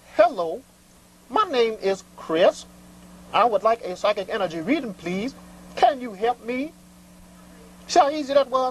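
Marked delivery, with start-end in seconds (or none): 0.2-6.7 courteous, proper, polite and respectful tone. Showing a caller how to greet the show: respectful, polite phone greeting. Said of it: "you call with respect".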